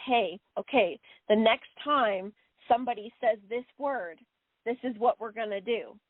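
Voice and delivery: ordinary talk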